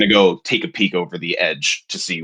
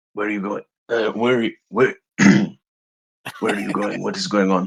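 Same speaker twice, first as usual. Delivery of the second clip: slipped-into put-on Russian accent. Acting out what a character would say, slipping into a Russian accent. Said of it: "slipped into his Russian accent".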